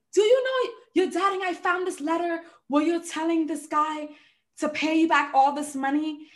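high-pitched, upset scolding tone. Speaker retells her mom calling about found letters, imitating mom screaming. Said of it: "my mom called me screaming at the top of her lungs".

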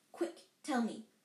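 plain

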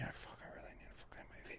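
soft whisper with a craving tone.

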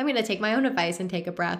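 really fast, rushed chatter.

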